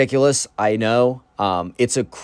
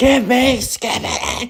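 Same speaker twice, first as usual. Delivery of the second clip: put-on very high, demanding, childish wail; 11 semitones higher than usual. Retelling a kid held by security guards, imitating a kid screaming. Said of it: "he's screaming".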